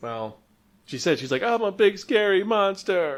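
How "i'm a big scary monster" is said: high, very slow, very drawn-out sobbing voice. Retelling a character's line while she cries: imitating crying. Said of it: "Or her crying".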